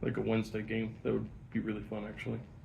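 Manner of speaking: very soft, barely audible mumble, trailing off.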